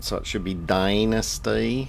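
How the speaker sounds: loud, slow, badly faked Texas drawl. Speaker naming a portal in a game, trying a bad Texas twang. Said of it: "bit of Texas twang on it".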